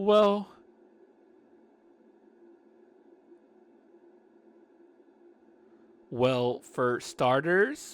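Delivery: crackling fry voice. Telling a story, speaker gives a woman character her voice: vocal fry voice. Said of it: "the vocal fry".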